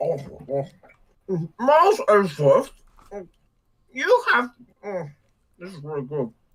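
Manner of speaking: put-on eating sounds while talking. Imitating the other reader eating as hungry Francisca: imitating hungry Francisca eating. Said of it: "I like hungry Francisca".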